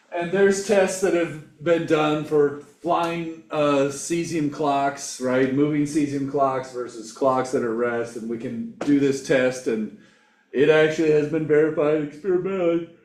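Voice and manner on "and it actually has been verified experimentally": words pulled out of shape by yawning. Explaining an experiment on moving clocks, yawning while talking. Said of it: "I'm yawning there".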